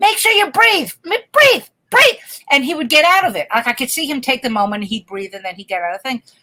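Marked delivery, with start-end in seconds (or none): 0.0-2.2 very high, loud, urgent, screamed encouraging coaching tone. Retelling screaming at a Little League pitcher from behind the catcher: imitating own screaming. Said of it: "screaming at him".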